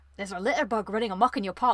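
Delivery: badly done, put-on Scottish accent. Recalling the guy from the old theme park, imitating a scottish guy. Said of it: "He was like a Scottish guy".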